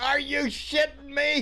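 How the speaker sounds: high, slow, drawn-out shout.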